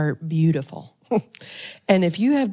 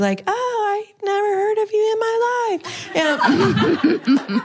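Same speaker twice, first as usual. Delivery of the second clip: put-on sugary-sweet tone, very high, slow, drawn out. A speaker quotes what listeners told them this week; mimicking a sweet remark. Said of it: "Several of you have sweetly said to me this week".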